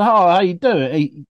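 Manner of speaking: put-on English accent with a twang. Retelling an old man's greeting, imitating his english accent with a twang. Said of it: "there was something not right about his accent".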